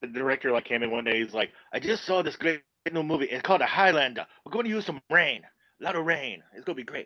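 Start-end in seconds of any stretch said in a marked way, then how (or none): 1.7-7.1 put-on stock Japanese accent. Quoting the director who came in one day about a new movie, in a stereotypical japanese director accent. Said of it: "My stereotypical Japanese director accent".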